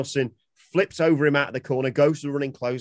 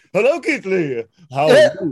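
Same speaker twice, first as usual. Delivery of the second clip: loud, swooping, sing-song wrestler voice; 7 semitones higher, 8 dB louder than usual. Retelling a wrestler's impression while interrupting another: Keith Lee impression. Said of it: "He does a Keith Lee impression".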